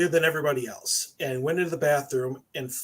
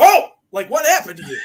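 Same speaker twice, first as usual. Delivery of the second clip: very loud, high, aghast outburst; 8 semitones higher, 12 dB louder than usual. Telling a story, acting out a man's reaction, as a mock-aghast exclamation. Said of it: "like he was aghast".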